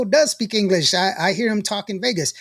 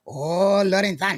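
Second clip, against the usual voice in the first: put-on Japanese accent. Retelling how they greet a man they know, in a put-on japanese accent. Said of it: "You sound stupid".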